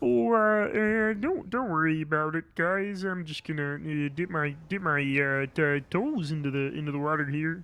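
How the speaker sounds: low, hesitant frog puppet character voice. Trying a different take on the voice, in a Kermit the Frog voice. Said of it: "Kermit the Frog".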